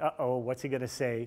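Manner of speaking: ordinary delivery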